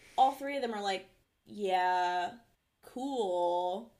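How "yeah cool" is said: mock heavy sarcasm, cool, stretched-out drawl. Retelling three characters' reply to a dinner offer: imitating a sarcastic reply. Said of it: "Very sarcastically".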